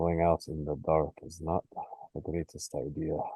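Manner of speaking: speaking very softly. Speaking up in character from behind another character at night, very quiet. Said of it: "going to very quietly say".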